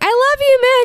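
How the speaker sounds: very high-pitched, tearful, sobbing fangirl gush. Telling about fans fooled by a fake accent, the speaker imitates a crying fangirl. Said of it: "fangirls would start crying and be like".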